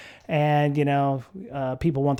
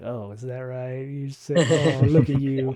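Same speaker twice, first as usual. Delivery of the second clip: mock withering, scathing, cutting tone. Mimicking another speaker's reply to a spending admission: mock scathing tone. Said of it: "that's so scathing".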